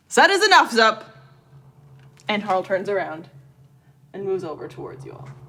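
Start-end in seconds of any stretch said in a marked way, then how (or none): 0.1-1.0 very gruff call, much higher and louder. A game narrator voices someone calling out from behind Zup, very gruff voice calling out. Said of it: "you hear a very gruff voice call out".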